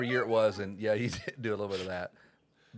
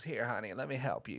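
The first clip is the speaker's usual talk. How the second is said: soft, slightly raspy, helpful-sounding woman's voice; 7 dB quieter than usual. Retelling a woman grabbing a kid's motorcycle to help, raspy Lois Martin voice. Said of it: "She had a little bit of a raspy voice".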